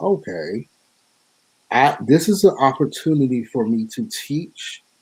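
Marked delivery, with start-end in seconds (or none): none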